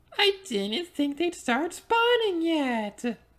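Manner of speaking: super high-pitched, chattering voice. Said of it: "I'm still talking in a super high-pitched voice".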